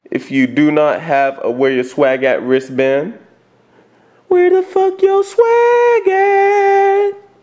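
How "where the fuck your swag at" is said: little put-on creep voice, very high. Signing off a video to viewers without the wristband, in a little put-on creep voice.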